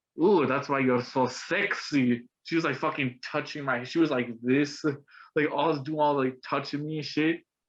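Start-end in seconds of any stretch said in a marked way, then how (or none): 0.2-2.3 slow, flirty, fake Russian accent. Speaker retells a woman's reply on hearing they're colombian, in a put-on russian accent. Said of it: "fucking like Russian ass accent".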